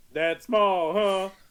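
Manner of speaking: imitated booming voice. Recounting a man nearby commenting while he pees, in a retold booming voice. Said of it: "I hear this booming voice".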